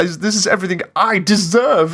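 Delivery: completely full of oneself. Imitating how Papyrus sounds in a line, self-satisfied Papyrus. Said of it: "he sounds like he's so satisfied with himself".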